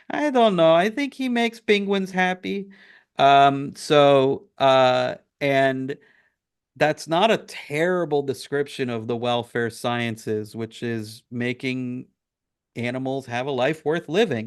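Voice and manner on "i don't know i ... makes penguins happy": put-on, loud Cuban accent, pitched high. Describing what they do for a living, the speaker quotes mom in her loud Cuban accent. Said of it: "in her loud Cuban accent".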